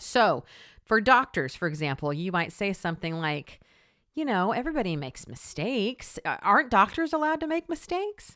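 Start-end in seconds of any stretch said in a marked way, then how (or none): 4.5-8.4 high, doubting, skeptical yeah-but tone. Example reply someone might give, in a skeptical devil's advocate tone. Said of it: "notice the tone in my voice. It's very devil's advocate-y, meaning it's very, yeah, but".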